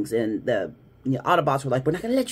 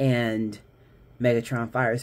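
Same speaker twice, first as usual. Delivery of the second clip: plain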